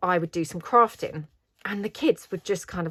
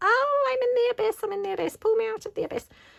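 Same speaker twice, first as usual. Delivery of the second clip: put-on very high, giddy, gleeful children's shouting. Describing kids who did this every night, imitating kids shouting.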